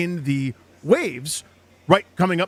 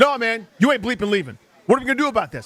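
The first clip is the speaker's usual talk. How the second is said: put-on aggressive voice, higher pitch; 4 semitones higher than usual. Retelling a stranger refusing to let him walk away; imitating the aggressive guy. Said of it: "He goes".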